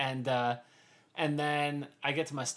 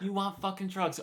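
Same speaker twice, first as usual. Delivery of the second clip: toned-down, high, mild, repeated yelling; 5 semitones higher than usual. Retelling a train encounter, imitating a man screaming at a homeless guy. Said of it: "he just started screaming".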